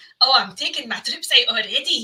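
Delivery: bad, unconvincing put-on Scottish accent. Mocking an English actor playing the King of Scotland, in a bad Scottish accent. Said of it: "that kind of Scottish accent".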